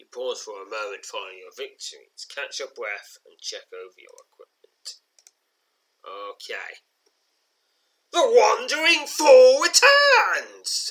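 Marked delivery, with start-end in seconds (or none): 8.1-10.9 very loud, very high, swooping, drawn-out roar. Reading a second-person adventure aloud, voicing the returning enemy prince: roaring as Prince Ikor. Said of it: "Roars Prince Ikor".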